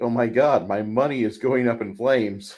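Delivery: ordinary talk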